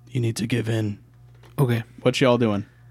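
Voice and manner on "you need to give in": quiet, much quieter, softly spoken. Cedric's recently deceased grandfather stands before him and speaks, quiet. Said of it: "he just quietly says".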